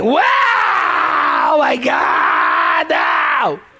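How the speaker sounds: loud, slow howling lament. Imitating how the mourners cry at the funeral: imitating loud wailing mourners. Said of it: "That's my impression".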